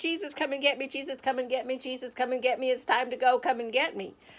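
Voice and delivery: pleading, crying out over and over. Telling of burning in a fire and looking up to heaven: re-enacted crying out. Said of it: "I'm just crying out to Jesus".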